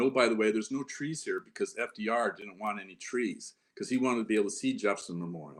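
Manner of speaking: ordinary talk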